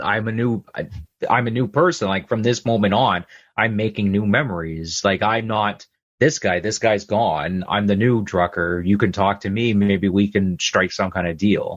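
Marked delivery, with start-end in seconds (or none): none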